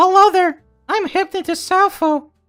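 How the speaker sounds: poor imitation of woman's voice. Told your imitation is annoying, you do it anyway: mocking, poor imitation of a woman. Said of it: "your voice when you attempt to imitate me".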